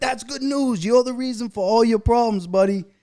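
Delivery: thrilled excited voice. Retelling what an early sponsor used to say: imitating Jay sounding excited. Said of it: "He would be so excited".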